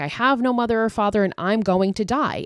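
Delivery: play-acted scream, toned right down, held back. Retelling how an adopted son screams at his mother, imitating someone screaming. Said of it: "he starts screaming like".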